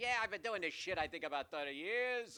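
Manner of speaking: put-on loud Chicago accent. Quote an award-winning industry veteran you spoke to about movies, imitating his Chicago accent. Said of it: "with his Chicago accent".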